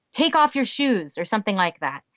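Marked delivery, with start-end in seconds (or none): 0.1-1.1 put-on very rough, frustrated, pitched-up tone. Retelling own words to a child at bedtime: retelling own rough tone. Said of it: "in a very rough tone".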